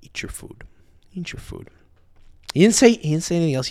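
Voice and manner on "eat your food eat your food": mock restrained quiet fury, much quieter. Speaker retelling how his dad answered when asked if it was that bad, retelling dad's quiet anger. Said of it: "He didn't yell. He just goes".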